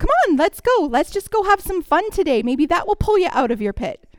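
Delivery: chirpy, bright, quick, upbeat happy voice. Showing how we might wrongly greet someone grieving, in a happy upbeat voice. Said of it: "in our happy voice go".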